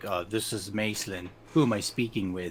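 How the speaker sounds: deep, low man's voice. Acting out a deep-voiced man introducing himself, deep-voiced man voice. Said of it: "this deep voiced man".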